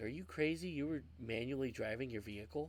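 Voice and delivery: plain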